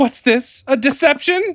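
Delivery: very high, shocked, startled gasping cry. Voicing a woman who finds an illusion, acting gasping in shock. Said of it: "She gasps, backing up".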